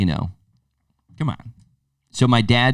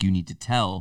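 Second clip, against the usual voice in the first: ordinary talk, nothing marked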